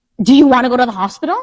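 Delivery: high, loud, flustered, exasperated frustrated yelling. Retelling yelling at a sick woman who won't take her medicine, retelling a scream. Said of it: "like starting to scream".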